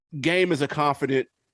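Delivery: plain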